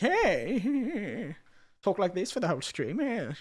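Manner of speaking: deliberately irritating, manic, swooping voice, "hey" stretched. Streamer trying out a voice for a game character, in a deliberately annoying manic voice. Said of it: "make my voice really annoying".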